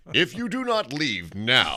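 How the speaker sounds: booming, high voice with big swoops. Wanting to use it for announcements, a speaker tries out the Wizard of Oz voice. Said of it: "The Wizard of Oz voice?".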